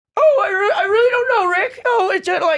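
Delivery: very high-pitched, stumbling, stammering cartoon voice. A speaker shows how they would talk: Rick and Morty voice. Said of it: "Rick and Morty voice".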